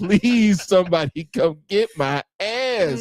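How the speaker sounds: high, drawn-out, acted-out begging voice. Retelling looking out a locked room's window, imitating own begging. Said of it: "I'm looking out the window just begging".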